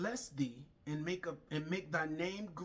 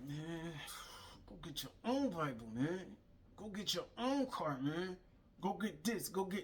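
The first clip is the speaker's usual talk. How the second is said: put-on mumbling under breath. Retelling being told to go get a Bible: imitating muttering under breath. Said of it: "under my breath".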